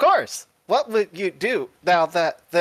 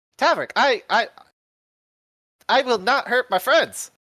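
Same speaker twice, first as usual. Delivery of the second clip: malfunctioning, glitching robot voice; 5 semitones higher than usual. In a tabletop game, a player voices a robot character addressing Taverick: broken robot voice. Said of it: "he's real broken".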